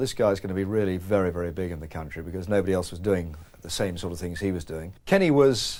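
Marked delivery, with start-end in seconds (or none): none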